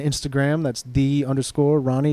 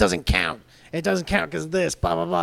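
put-on angry, complaining voice, pitched higher; 4 semitones higher than usual. Retelling how Seth Rollins reacted to a video of a jump, mock-angry Seth Rollins impression. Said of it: "He was so mad".

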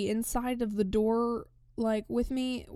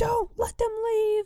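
play-acted, shrill, very high-pitched scream; 11 semitones higher, 4 dB louder than usual. Retelling a man screaming at train conductors; imitating someone screaming. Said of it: "He's screaming in Bulgarian at these conductors".

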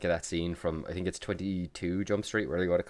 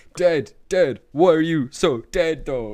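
shrill, very high, loud slam-poet declaiming; 10 semitones higher, 10 dB louder than usual. Picturing some dude on a stage: imitating a slam poet on stage. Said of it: "some dude on a stage going".

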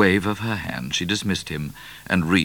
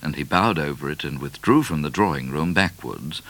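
ordinary delivery

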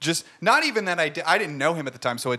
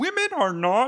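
very high, squeaky puppet-frog voice; 10 semitones higher than usual. Trying to get into an impression of Jordan Peterson: Jordan Peterson impression. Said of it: "as I try to get into a Jordan Peterson".

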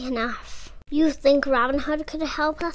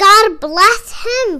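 very loud, high, ringing cry; 7 semitones higher, 12 dB louder than usual. Among gasping villagers, another villager cries out. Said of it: "cried another".

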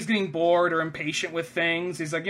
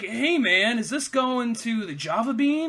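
put-on cool-cat beatnik hipster voice; 5 semitones higher than usual. Imitating a heist thug who looks out of place: imitating a beatnik. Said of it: "should be at a fucking beatnik bar".

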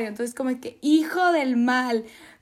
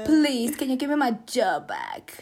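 British accent with swooping intonation. Pretending to ask the queen to give the job back: attempt at British English. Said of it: "Eso fue mi intento de hablar en inglés, inglés inglaterriano".

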